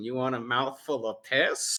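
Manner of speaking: mock-seductive voice. Retelling a movie scene, one character speaks to another; mock-seductive. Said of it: "kind of like seductively goes".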